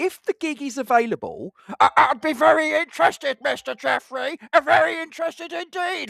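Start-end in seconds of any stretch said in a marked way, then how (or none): 1.8-6.1 very high, loud, slightly maniacal, unhinged voice. A speaker asking about a voice role shows off Zippy: slightly maniacal Zippy impression. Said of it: "Slightly maniacal, off the wall".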